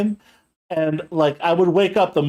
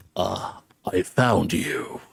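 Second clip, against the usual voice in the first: put-on deep, dark, furious whisper, very slow, drawn out; 8 semitones lower, 5 dB quieter than usual. Retelling how a man-cat creature found and pinned them: imitating a deep, angry voice. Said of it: "in a very deep, angry voice".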